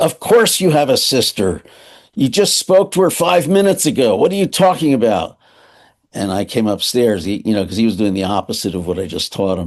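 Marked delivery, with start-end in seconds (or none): 0.0-5.4 put-on, high, all-out screamed ranting outburst. Retelling how the father answered the mother: imitating a scream. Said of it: "I'd hear him screaming".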